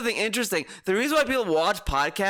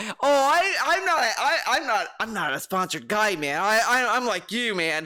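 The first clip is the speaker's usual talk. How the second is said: insincere, fake-casual, stammering commercial-style salesman voice. Mocking a podcaster who claims he doesn't shill: mocking imitation of a shill. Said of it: "acting as if he doesn't shill".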